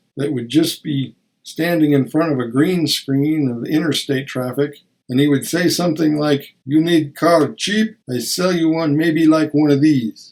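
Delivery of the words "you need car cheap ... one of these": put-on Eastern European accent, laid on thick. Quoting a guy selling cars in front of a green screen, thick eastern european accent. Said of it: "thick Eastern European accent".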